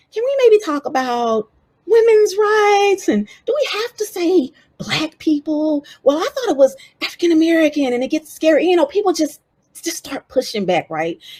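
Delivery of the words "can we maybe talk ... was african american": high, mock-worried, hedging voice. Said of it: "everybody saying".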